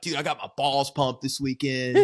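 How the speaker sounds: put-on voice of a roughly seventy-year-old man. Retelling what an old man at the gym would say: imitating a seventy-year-old gym regular. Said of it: "he'd come in and be like".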